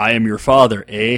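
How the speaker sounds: loud, hammed-up, exaggerated Canadian accent. Someone asks about your costume, so answer with a Bob and Doug from Strange Brew impression. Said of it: "do your impression of Bob and Doug from Strange Brew".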